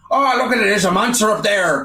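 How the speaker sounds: put-on high-pitched Irish policeman voice and accent. Retelling game voice lines shouting over each other: imitating an irish cop. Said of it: "the Irish cop".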